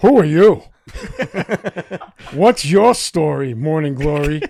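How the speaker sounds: pointed teasing jab tone. Imagining Al doing crowd work: Al Pacino voice. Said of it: "Can you imagine Al, Al doing crowd work?".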